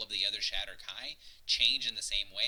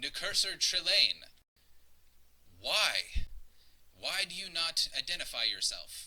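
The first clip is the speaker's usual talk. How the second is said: strong, raised, authoritative, commanding voice; 5 semitones higher than usual. Speaker recounting a scene where a character challenges someone, imitating a commanding guard voice. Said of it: "he says that voice as he speaks out".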